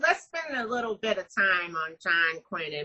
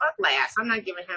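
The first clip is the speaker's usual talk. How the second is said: ordinary talk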